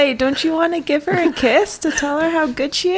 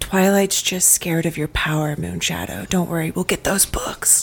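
soft, secretive whisper; 11 semitones lower, 5 dB quieter than usual. Playing Fifi, secretly telling Moonshadow they'll get the books: whispering in character. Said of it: "Fifi's gonna whisper to Moonshadow and say".

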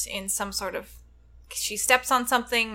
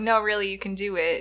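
normal talking voice

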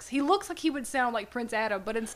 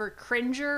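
normal talking voice

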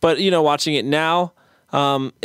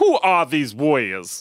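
slow, awkward, clumsy delivery. Quoting a favorite movie line, asking if it was terrible: possibly bad movie-line impression. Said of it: "is that terrible?".

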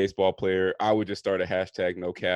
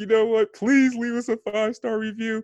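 very high, swooping, sing-song, dry pleading tone; 13 semitones higher than usual. Mocking the other host's request for five-star reviews: imitating someone begging. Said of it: "it did sound like he was dry begging".

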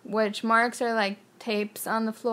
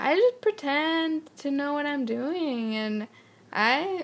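put-on French accent, higher pitch; 6 semitones higher than usual. Imitating a director's interview answer: French accent imitating Michel Gondry. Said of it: "in a French accent".

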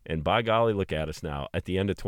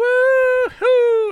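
put-on scream, higher and louder; 12 dB louder than usual. Retelling driving with windows down, imitating his own past screaming. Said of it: "And I was just screaming".

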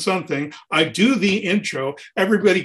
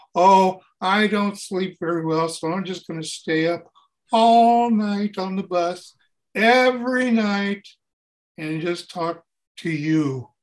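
put-on gloomy comedian voice. Imitating the comedian's answer on the bus: darker offstage Emo Phillips voice. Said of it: "he's actually darker when he gets off stage".

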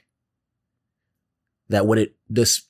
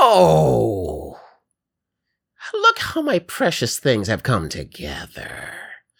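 sweet grandma voice, not ominous. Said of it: "sound like grandma".

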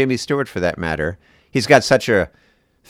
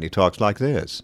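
put-on upper-class mid-Atlantic accent, quieter and slower; 5 dB quieter than usual. Describing an old upper-class accent, the speaker imitates George Plimpton's mid-Atlantic accent. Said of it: "he has a sort of mid-Atlantic accent".

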